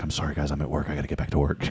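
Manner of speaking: very quiet, hushed, secretive whisper. Retelling how a caller answered while at work: imitating Jennifer whispering at work. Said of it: "on the hush hush".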